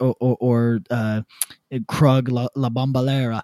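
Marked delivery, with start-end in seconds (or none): 2.5-3.4 put-on patois-style pronunciation. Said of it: "Why do you keep saying it like that?".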